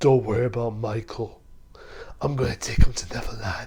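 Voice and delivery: deep, low, menacing, threatening voice. Reviewing a film, quoting the villain's line: imitating Peter Pan's deep menacing voice. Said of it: "he gets that deep, scary, menacing voice like".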